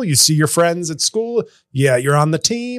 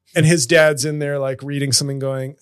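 ordinary talk

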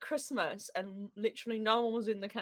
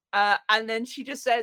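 ordinary delivery

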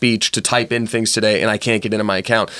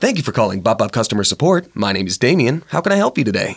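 prerecorded, automated support-line message voice. Recalling answering customer-support calls, the speaker sounds like an automated recording voice. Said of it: "make my voice sound not necessarily robotic, but like a recording".

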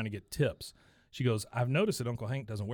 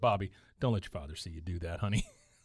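usual speaking voice

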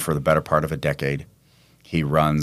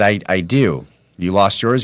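ordinary talk, nothing marked

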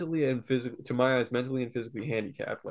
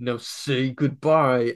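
loud, really gruff, insistent voice; 6 dB louder than usual. Retelling how the person filming repeated an order: imitating a gruff command. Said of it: "really gruffly".

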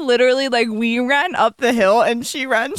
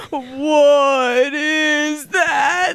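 put-on slow-motion, slowed-down speech. Retelling a friend's line said in slow motion, imitating slow-motion speech. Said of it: "unintentionally said it in actual slow motion".

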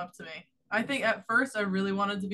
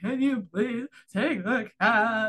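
acted-out, loud, bawling crying voice; 5 dB louder than usual. Retelling the phone call to Curran, acting out bawling.

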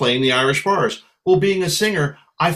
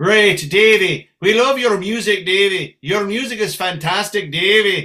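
put-on Irish brogue; 4 semitones higher than usual. Mimicking people praising Davey's music, in an Irish brogue. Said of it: "When I hear Davey in an Irish brogue".

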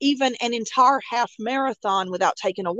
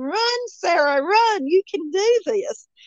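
mock screaming, high and drawn-out; 6 semitones higher than usual. Retelling running behind a companion and dragging her along, retelling a scream. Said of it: "And I was screaming".

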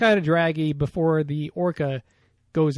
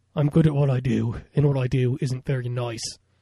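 spoken in Australian accent; 3 semitones lower than usual. Redoing the impression a co-speaker says they did, Australian Wolverine impression. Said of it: "Australian Wolverine is like".

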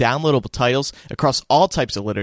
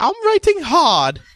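put-on voice, pitched very high; 13 semitones higher than usual. Imitating J K Rowling saying she writes hard: J K Rowling impression. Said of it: "is that your impression of J K Rowling?".

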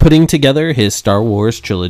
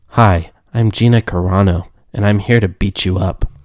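flat monotone delivery with no tune; 3 semitones lower than usual. Doing her in any role, with flat monotone Gina Carano voice. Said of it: "my Gina Carano impression. ... Very monotone".

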